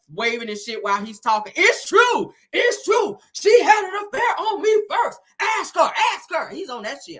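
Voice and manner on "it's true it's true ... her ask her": very high, loud, drawn-out, agitated hollering. Retelling a story about a divorced couple, imitating Martell hollering. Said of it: "starts all this hollering".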